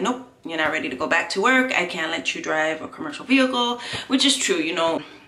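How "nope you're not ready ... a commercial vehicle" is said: normal talking voice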